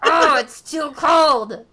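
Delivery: angry goblin voice, booming, cranky, high and loud. Describing how the cold makes the speaker angry, imitating themself: gobliny angry voice. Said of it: "I get this really gobliny angry voice like".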